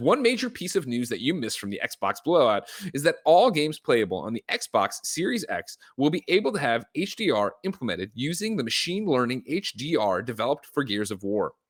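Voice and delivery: plain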